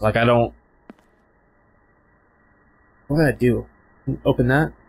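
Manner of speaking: anxious, on-edge, nervous, unsure tone. Playing a horror game on stream, nervous. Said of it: "I'm so nervous right now".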